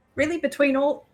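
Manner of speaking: put-on Southern accent slipping in. Voicing a character in a game, slipping into an accidental southern accent. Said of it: "I don't know what accent just came out of my mouth".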